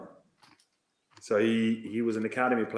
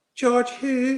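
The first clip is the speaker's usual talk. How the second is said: put-on high, loud Irish accent. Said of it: "I'll try an Irish accent".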